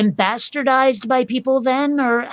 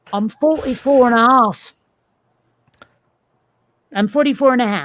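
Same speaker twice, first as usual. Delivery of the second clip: clumsy, stupid-sounding, bad fake British accent. During an argument about someone's age, a speaker answers: stupid British accent. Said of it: "I shouldn't have tried to do it in a stupid British accent".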